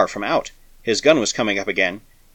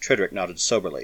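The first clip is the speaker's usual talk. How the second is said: ordinary delivery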